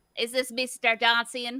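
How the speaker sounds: poor put-on attempt at a New York accent. Acting out how she talks from her robe, failed Judy New York accent. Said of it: "I don't know what New York accents are".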